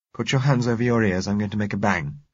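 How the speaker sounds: plain reading voice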